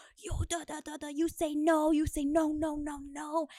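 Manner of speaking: mock angry yelling. Retelling how a vendor came up in line: imitating someone yelling aggressively.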